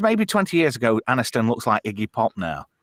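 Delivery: ordinary talk, nothing marked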